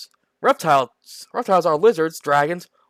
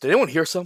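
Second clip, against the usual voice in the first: sarcastic put-on character voice; 3 dB quieter than usual. Acting out the character Eldred's reply: sarcastic Eldred line. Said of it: "Leave the sarcastic remarks to me".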